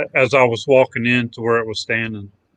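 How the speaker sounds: ordinary delivery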